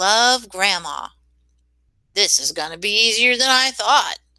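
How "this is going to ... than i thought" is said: snarling wolf-like voice. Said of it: "the wolf snarled".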